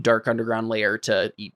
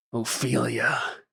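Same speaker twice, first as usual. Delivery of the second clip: put-on cracked wheezing voice. Storyteller voicing the wounded Cyrillus saying a name, in Cyrillus's cracked, wheezing voice. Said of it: "his voice is like all cracked and wheezing".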